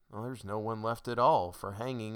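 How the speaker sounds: ordinary delivery, nothing marked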